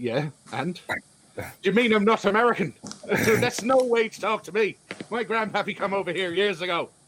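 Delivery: put-on Irish accent, pitched high throughout. Told by another character they have an irish accent, replying in an irish accent. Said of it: "You've got an Irish accent".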